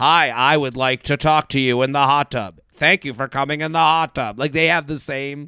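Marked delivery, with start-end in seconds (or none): 0.0-4.4 robotic, even, droning delivery in flat monotone. Imitating two people who talk alike, in a monotone robot voice. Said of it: "the same monotone robot voice".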